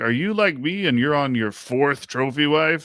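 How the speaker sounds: high-pitched radio ad announcer voice. Retelling a Chicago radio commercial: imitating Big Lou. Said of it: "I hear him on the L-, Chicago radio. He's like".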